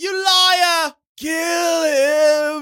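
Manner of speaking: loud, shrill villain screech, "him" drawn out. Asked if he walks around the house doing it, repeating it: Voldemort impression. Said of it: "Trelawney and Voldemort, man, you got it down".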